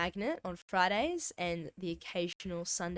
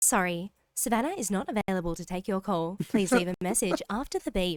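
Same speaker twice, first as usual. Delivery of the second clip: raised, automated voicemail-assistant style voice; 7 dB louder than usual. Acting out a voicemail greeting on a call: Siri voice. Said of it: "my Siri voice".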